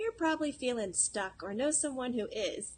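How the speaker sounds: TV-ad commercial announcer voice. Retell what he says after the link about feeling stuck, in a commercial announcer voice. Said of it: "pretending like he's in a commercial".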